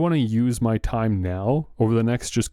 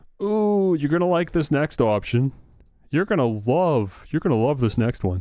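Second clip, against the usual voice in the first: heavily sarcastic, drawn-out delivery; 3 semitones higher than usual. Introducing the next option on a list: sarcastic. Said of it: "I'm being sarcastic".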